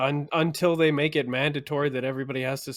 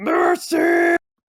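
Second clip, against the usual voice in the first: very loud, shrill, high-pitched battle scream; 9 dB louder than usual. Answering how Braveheart says it: Braveheart battle scream. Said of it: "I would say it like Braveheart".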